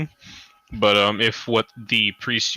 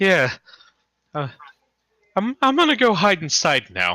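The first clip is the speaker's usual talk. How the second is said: nervous laugh, much higher pitched; 9 semitones higher than usual. Game master voices a character who retreats back inside, laughing nervously. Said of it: "he kind of like nervously laughs".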